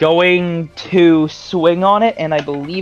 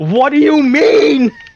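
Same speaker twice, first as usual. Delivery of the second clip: long, high-pitched yelling; 9 semitones higher, 4 dB louder than usual. Voicing a character who yells at a creature: yelling at the creature. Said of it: "kinda yell at the thing".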